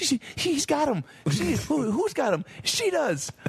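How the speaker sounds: put-on high-pitched kid voice. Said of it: "he's like".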